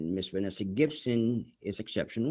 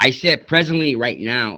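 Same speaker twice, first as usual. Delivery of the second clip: very loud, insistent, raised, higher-pitched repetition; 5 semitones higher, 13 dB louder than usual. Asked to raise their voice a little, the speaker repeats their words, speaking louder. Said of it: "you raise your voice a little bit?".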